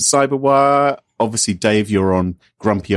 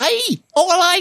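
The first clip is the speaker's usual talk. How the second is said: very high-pitched Liverpool Scouse accent. Describing people from liverpool, showing how they talk: scouse accent. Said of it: "like they're talking like that all the time".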